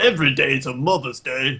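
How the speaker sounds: put-on angry voice, sounding truly angry. Talking with others about Mother's Day and Father's Day, use a mock-angry voice. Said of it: "Like you're really angry about Mother's Day".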